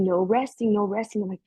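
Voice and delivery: ordinary talk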